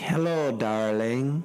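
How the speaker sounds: put-on British accent. Retelling a phone call from a private number, put-on British accent. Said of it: "a British accent is like".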